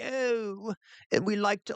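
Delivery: pompous professor voice. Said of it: "talks like an academic".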